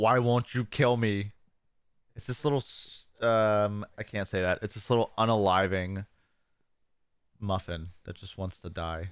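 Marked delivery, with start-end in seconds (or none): 0.0-1.3 put-on aggressive, forceful voice. Retelling a cartoon muffin's line: imitating an aggressive muffin. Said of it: "he just gets more and more aggressive".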